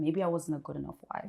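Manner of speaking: ordinary talk, nothing marked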